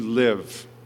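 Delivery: weight placed on 'to live'. Quoting 'for me to live is Christ', the speaker repeats the words, stressing 'to live'. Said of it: "Let me emphasize the words".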